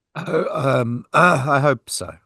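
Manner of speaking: high, teary voice brimming with emotion. Asked about racing london, answering emotional, tearing up. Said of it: "You can hear the emotion in his voice".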